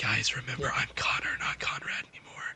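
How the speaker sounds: hushed whispered aside in a character voice. Whispering to the others in character as Connor: whispering in character. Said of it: "I'm gonna whisper to him".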